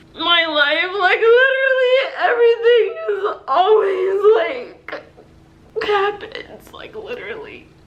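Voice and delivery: loud blubbering, sobbing, tears in every word. Filming a YouTube video for viewers while crying. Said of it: "why I'm crying right now".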